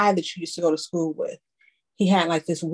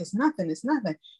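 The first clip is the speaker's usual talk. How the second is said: mock irritated, a little fed up, frustrated tone; 3 semitones higher, 4 dB quieter than usual. Retelling his answer when asked about the mark: imitating someone getting frustrated. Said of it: "he's getting a little frustrated".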